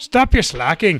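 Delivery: put-on Irish accent in a head officer voice. Voicing the head communication officer in a story, with an Irish accent. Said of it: "Why am I getting an Irish accent?".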